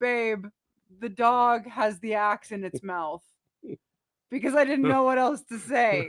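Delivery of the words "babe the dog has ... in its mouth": ordinary delivery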